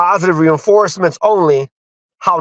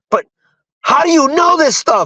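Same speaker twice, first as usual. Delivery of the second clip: put-on shrill, furious yell, very high; 9 semitones higher than usual. Retelling what he said in his message the next morning, mock-angry. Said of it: "And he's like mad".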